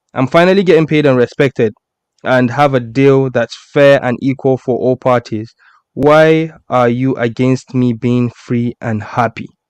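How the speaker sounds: usual speaking voice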